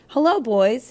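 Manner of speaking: cheerful voice. Reading a story, the narrator voices a woman greeting two boys: cheery voice. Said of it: "she said in a cheery voice".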